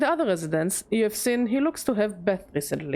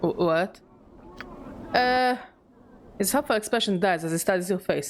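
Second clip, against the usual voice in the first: ordinary talk, nothing marked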